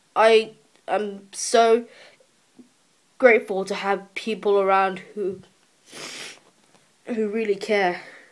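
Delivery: tearful, welling-up voice, wet with tears. Thanking everyone at school, the speaker talks while tearing up. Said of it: "I'm tearing up again a little bit".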